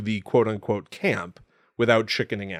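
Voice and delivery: ordinary delivery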